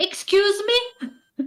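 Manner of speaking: piercing, shrill, very high-pitched screaming shriek. In court, someone reacts to hearing a confession to eating the necklace, screaming. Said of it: "Sorry for screaming".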